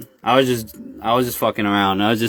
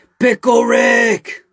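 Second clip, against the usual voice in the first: very high, loud cartoon shout with one word drawn out; 12 semitones higher, 6 dB louder than usual. Asked for a Rick Sanchez impersonation, the speaker attempts one: Rick Sanchez impression. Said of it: "I can't pull a good Rick unless".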